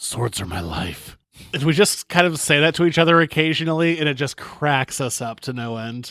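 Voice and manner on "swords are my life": loud, hushed, carrying stage whisper. Retelling what a man by a sword vendor said: imitating a loud whisper. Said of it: "loudly whispered".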